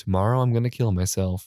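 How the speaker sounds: ordinary delivery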